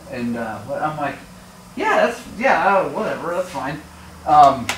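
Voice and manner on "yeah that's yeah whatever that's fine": usual speaking voice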